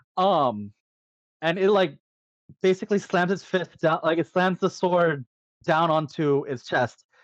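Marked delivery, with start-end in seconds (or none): none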